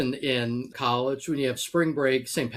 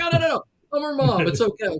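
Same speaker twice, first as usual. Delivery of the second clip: put-on panic, higher, slower; 12 semitones higher, 5 dB louder than usual. Retelling a mom who yelled at her daughter's game: imitating a panicked mom. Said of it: "You can tell she panicked".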